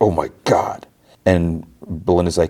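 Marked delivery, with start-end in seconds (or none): 0.0-0.9 play-acted recoiling, almost disgusted. Retelling a scene where the doctor answers Ruby: imitating disgust. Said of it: "with, like, almost disgust".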